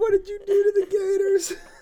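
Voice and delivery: very high, loud squeal through laughter.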